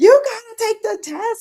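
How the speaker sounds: shrill, very high-pitched, crazed scream. Retelling a show's mother in the hospital: imitating a mother screaming. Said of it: "she just started screaming".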